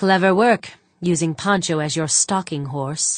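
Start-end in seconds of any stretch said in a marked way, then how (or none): none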